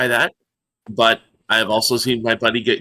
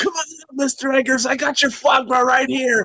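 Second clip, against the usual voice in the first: very high, shouted delivery; 14 semitones higher than usual. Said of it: "I was gonna yell".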